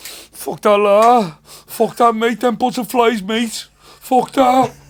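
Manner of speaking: high, very loud sobbing wail through tears. Retelling a terrified friend at home with his mum: imitating a friend crying. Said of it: "he started crying and all that".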